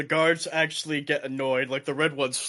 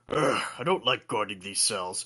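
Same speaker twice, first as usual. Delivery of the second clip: grumbling voice, lower and quieter; 5 semitones lower, 5 dB quieter than usual. Voicing a bored red dragonborn guard: red dragonborn guard grumbling. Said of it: "he's just like".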